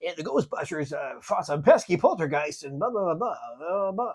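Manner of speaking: put-on radio dj announcer voice. Imitating the radio DJ's voiceover from the movie: Casey Kasem impression. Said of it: "that was a good, uh, impression".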